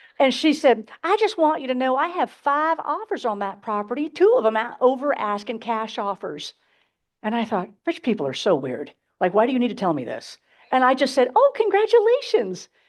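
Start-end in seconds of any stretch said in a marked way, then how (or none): 1.0-6.5 cutesy, sweet put-on Southern accent. Quoting what the property owner told the speaker, in a cute put-on southern accent. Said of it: "it's so much cuter when I do it like this".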